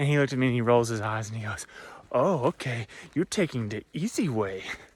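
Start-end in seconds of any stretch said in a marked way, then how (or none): 2.1-4.6 put-on German accent on English. Retelling what a hiker friend said on the trail: imitating Stefan's German accent. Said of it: "sorry for my German accent".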